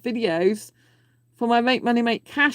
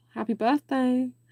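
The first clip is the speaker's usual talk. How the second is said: seductive, sultry, sexy delivery; 3 semitones higher, 3 dB quieter than usual. Wishing someone a happy birthday again, this time in a sexy voice. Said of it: "I said that in a very different voice, a more sexy voice".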